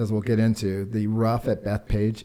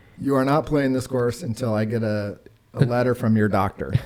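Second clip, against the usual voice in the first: normal talking voice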